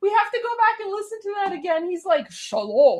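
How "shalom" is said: mock menacing delivery, lower. Retelling how a man in a video said a greeting: imitating a threatening tone. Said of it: "he's trying to sound so threatening".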